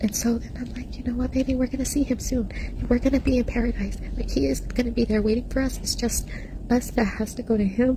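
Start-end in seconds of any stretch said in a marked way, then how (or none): none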